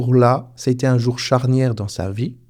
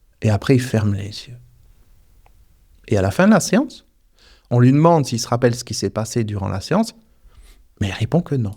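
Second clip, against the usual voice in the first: ordinary talk, nothing marked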